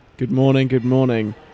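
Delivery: tired, unenthusiastic voice. Podcast co-host greeting listeners after a long week, unenthusiastic tired voice. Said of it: "lack of enthusiasm in my voice this morning".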